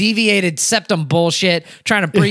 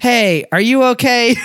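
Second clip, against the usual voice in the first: mock overly polite tone, higher; 4 semitones higher, 3 dB louder than usual. Telling friends about calling customer service, acting out being overly polite. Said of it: "I'm like overly polite".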